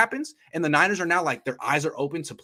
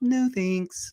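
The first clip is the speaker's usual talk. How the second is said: very high, laid-back, cool put-on voice; 9 semitones higher than usual. Imagining a player turning down an option: cool, quiet Nick Bosa impression. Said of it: "the same but quieter ... That's my impression of Nick Bosa".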